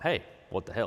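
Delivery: ordinary talk, nothing marked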